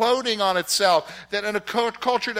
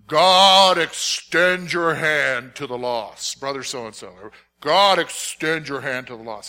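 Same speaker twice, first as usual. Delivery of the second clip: deep churchy preacher voice; 7 semitones lower than usual. Retelling a deacon's weekly prayer from a group story: deep deacon voice. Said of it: "pray in his deep deacony voice".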